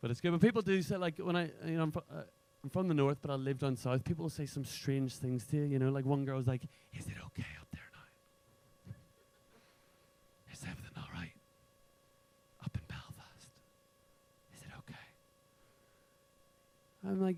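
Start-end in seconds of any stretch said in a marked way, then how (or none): 6.9-15.0 put-on whisper, lower and quieter. Retelling what one girl asked about belfast: imitating someone whispering. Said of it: "and why are you whispering?".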